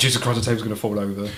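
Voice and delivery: ordinary delivery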